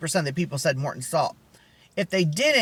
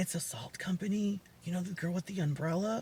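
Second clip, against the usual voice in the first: much softer, hushed aside. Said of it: "I would say it really quietly".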